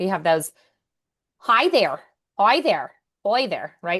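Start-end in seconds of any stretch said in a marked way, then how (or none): 1.4-3.8 sing-song Irish accent, hard R in "there". Explaining the Irish dialect, demonstrating Irish hard R's. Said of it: "the hard R's because in Irish".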